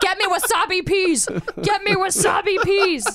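loud, high, demanding shout.

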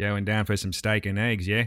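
attempted Australian accent. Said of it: "you try and then I'll try".

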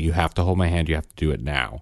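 acted stern, firm, no-nonsense tone. Retelling telling a child to hold hands: imitating own stern voice. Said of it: "I was very stern".

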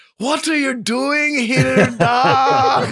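very high, very slow, loud fake Irish accent. Mocking the line everybody uses when going Irish with it, put-on Irish accent. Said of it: "we're going to go Irish with it".

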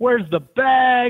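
mock, very high calling out, "bags" drawn out. Retelling a teammate hollering down a hotel hallway for his bags: imitating someone hollering. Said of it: "He was hollering down the hallway".

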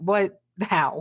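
put-on livid outburst. Recapping a TV scene, acting out the character's reaction: imitating a livid outburst. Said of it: "He's livid".

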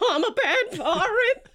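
very high, very slow, drawn-out weeping speech. Narrator voicing a pirate being shaken by a player: weeping while talking. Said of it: "He's just full weeping now as he's saying".

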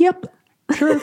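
meekest, tiny, very high-pitched voice. Retelling a shocked answer to a sudden request, imitating a meek little reply. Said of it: "I just let out like the meekest little".

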